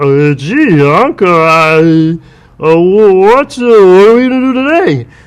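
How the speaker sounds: high, slow, loud halting voice, stretched "I". Remembering an old Mister Magoo record, showing how Wally talked: Wally voice. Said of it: "Wally used to talk like this".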